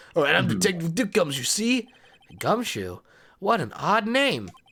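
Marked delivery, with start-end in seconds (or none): 0.1-1.9 1920s movie gangster voice. Voicing game dialogue, the detective introduces himself in a 1920s-style voice. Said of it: "the sentence implies that it'd be that nineteen twenties".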